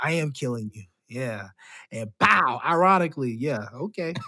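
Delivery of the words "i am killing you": put-on smug, smirking boastful tone, lower and quieter. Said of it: "He had that smirk and smile".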